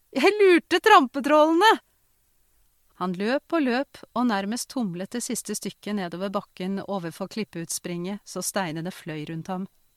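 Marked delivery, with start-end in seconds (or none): 0.2-1.7 winded, breathless, high yell at full volume. A boy running down toward the hillside shouts breathlessly. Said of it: "ropte gutten kortpustet".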